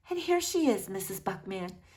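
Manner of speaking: very gentle way of speaking. Reading a story aloud, voicing a character speaking to a girl's mother, very gentle voice. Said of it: "in a very gentle voice".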